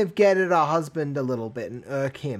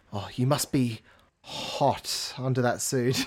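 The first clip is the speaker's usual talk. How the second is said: put-on breathy whisper, lower pitch; 3 semitones lower, 4 dB quieter than usual. Retelling what she whispered in his ear: imitating a breathy whisper. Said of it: "came over and whispered in my ear".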